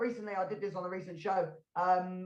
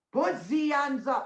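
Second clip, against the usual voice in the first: put-on German-accented delivery; 6 semitones higher, 4 dB louder than usual. Picturing himself walking around with a musket and acting it out in a German accent. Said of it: "That's a German accent".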